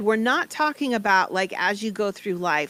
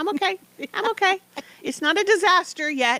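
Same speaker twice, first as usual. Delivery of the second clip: very high-pitched, little squeaky voice; 10 semitones higher than usual. Performing a bit in conversation, using a squeaky voice. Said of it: "We use the squeaky voice".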